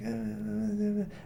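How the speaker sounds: high, soft, put-on mumbling. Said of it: "he kinda, like, mumbles".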